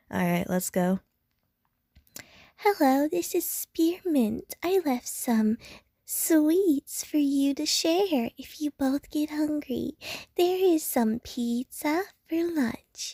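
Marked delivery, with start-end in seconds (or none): 2.5-13.1 very high-pitched put-on character voice. Voicing a female character's message, trying to sound like her: put-on very high voice. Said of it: "I'm gonna try to my best to sound like her. ... Her voice is very high".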